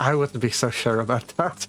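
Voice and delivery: smiling while speaking. Voicing a character who steps out and answers the group: smiling while speaking. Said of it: "smiling says".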